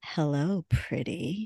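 very low, sultry, seductive, sexy voice. Reading a stranger's message aloud after being asked: sexy voice. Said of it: "Anne's sexy voice".

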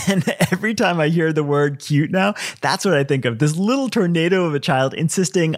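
usual speaking voice

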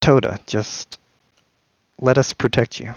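strange, odd, otherworldly voice. A voice from a staff answers a confused Toda, odd and out-of-time. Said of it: "and this very odd, almost out of time voice, / and this very odd, almost out of time voice".

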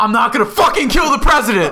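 really loud, high-pitched yell at the top of the lungs. Retelling what someone yelled while running over to a kid, retelling a really loud yell. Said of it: "like really loud".

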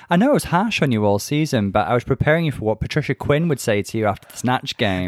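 ordinary talk, nothing marked

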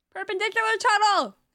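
high, loud shouted call-out. Playing a character alerting the group to a tunnel ahead: shouting. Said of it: "I shout".

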